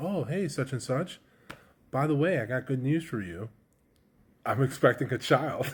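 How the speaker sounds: chuckling, laughing through the words. Retelling telling a manager about a baby: retelling own line while laughing. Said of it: "I'm just kinda laughing and".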